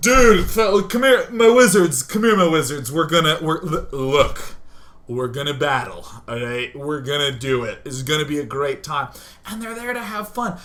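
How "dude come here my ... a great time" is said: mock-drunk voice, slower. Speaker acting out people who show up drunk at eight in the morning, imitating drunk people. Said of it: "there drunk at freaking".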